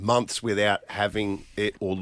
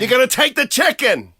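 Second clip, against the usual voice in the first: shrill, booming yell; 10 dB louder than usual. Imitating a cooking video host on Instagram: imitating a yelling cooking video host. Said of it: "he yells".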